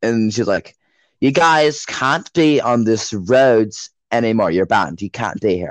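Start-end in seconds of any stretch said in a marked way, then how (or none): 1.2-5.7 put-on British accent. Retelling what a woman told the group, in a stereotype British accent. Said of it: "Why are you making her British".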